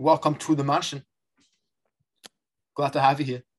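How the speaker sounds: put-on loud, drifting into a slight South African accent. Attempting a Carlton Banks impression that drifts slightly South African. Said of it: "starting to sound a little South African now".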